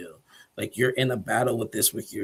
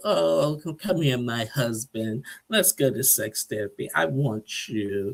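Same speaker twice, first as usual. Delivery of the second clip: mock sweet, lovey-dovey, affectionate tone; 3 semitones higher than usual. Retelling how his wife came out after getting dressed: mock lovey-dovey tone. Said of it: "she's all in a all in a lovey mood".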